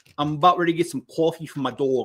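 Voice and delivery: put-on New York accent. Retelling what a rude woman would have said: imitating her New York accent. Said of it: "with her accent. This is what she would have said".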